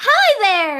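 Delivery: put-on high, girlish little girl voice. Showing the kid voice used for roles: little girl kid voice. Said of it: "this really Lolita little girl".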